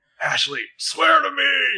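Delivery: slow, drawn-out, very high, gruff voice. Joking about a show character's gruff voice, in a Batman voice. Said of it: "Batman voice".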